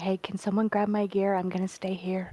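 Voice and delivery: imitated whisper. Describing how a fellow player asked for help, imitating someone whispering. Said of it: "She's like whispering".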